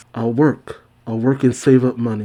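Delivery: ordinary talk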